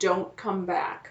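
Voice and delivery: put-on young girl's whisper. Telling friends a ghost story about Great Clown Island; young girl's whisper. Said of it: "the sound of a young girl whisper".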